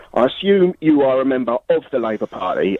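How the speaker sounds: plain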